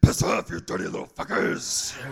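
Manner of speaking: rough, creaky, roaring put-down. Voicing a reply roared back at timid suitors: roaring back. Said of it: "my vagina will roar back at them".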